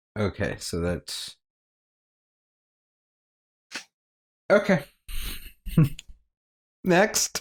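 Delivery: talking through giggles. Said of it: "Why are you giggling?".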